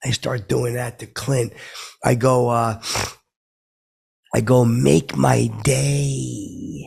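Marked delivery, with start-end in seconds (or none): 4.6-6.9 rough, creaky, raspy voice, day drawn out. Retelling doing an impression at an event: Clint Eastwood impression. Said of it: "'Cause I do to Clint".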